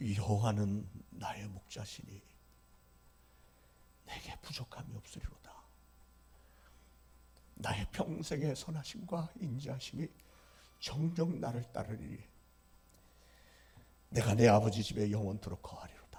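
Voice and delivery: put-on shaky elderly male voice.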